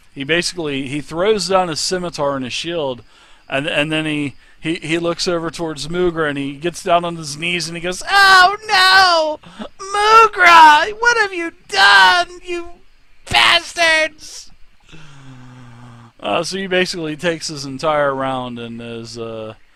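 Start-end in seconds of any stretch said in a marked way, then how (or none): 8.1-14.5 very high, very slow, loud grieving wail. Voicing a goblin on his knees over his fallen friend: goblin mourning his friend. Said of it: "basically mourning the loss of his".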